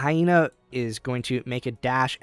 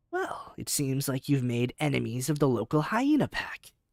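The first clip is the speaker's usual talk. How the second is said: smugly grinning; 2 semitones higher than usual. Voicing a grinning character talking to the six heroes: smug. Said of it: "the smuggest grin on his face".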